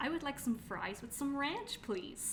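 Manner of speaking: put-on Valley Girl way of talking. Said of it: "That's how you do it".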